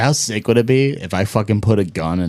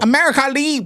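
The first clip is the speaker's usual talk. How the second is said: put-on Vietnamese accent, pitched very high. Showing off accent skills in a back-and-forth, speaker performs: mock vietnamese accent. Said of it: "I could do an expert Vietnamese accent".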